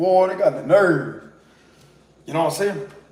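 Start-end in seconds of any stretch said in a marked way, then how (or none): 0.0-1.2 everyday-sounding, put-on Cajun accent. Repeating something they once said, delivered in a Cajun accent. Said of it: "Like my Cajun accent".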